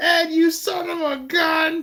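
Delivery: mock very high, long, drawn-out holler. Retelling a joke where the wife runs onto the porch: imitating someone yelling. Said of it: "runs out on the front porch and yelling".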